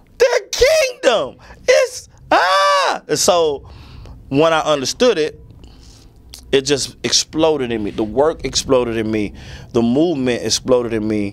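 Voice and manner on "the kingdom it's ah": very high, slow, overwhelmed tearful crying. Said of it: "And I was like".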